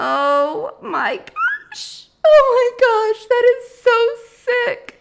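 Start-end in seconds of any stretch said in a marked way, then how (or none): 0.0-4.1 high, loud, choked teary near-laugh. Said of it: "I'm seriously almost tearing up".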